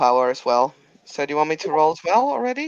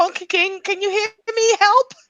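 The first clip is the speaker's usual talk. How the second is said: very high-pitched yelling. Voicing a character calling out to a wounded ally: shouting for help. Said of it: "Darcy's just gonna shout".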